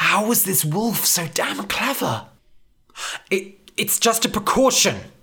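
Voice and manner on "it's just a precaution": high, stammered, stumbling, broken-up words. Demetrius answers the wolf, who sees through him: stammering. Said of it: "Demetrius stammered".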